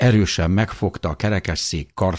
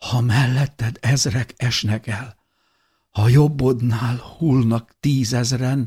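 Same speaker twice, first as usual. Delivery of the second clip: hushed whispering, much higher pitch; 5 semitones higher than usual. A woman, recalling something long forgotten, starts a sentence her husband finishes: whispered. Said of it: "suttogta tágra nyílt szemekkel".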